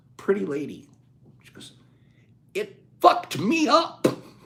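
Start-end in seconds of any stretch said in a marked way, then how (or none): 2.6-4.1 put-on very high, very slow German accent. Quoting a woman's answer to the speaker's question: attempted German accent. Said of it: "German accent, I can't do it".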